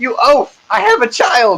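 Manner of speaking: very high-pitched dwarven woman voice. Voicing a dwarven woman knocked down with her child: dwarven woman character voice. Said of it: "She's like".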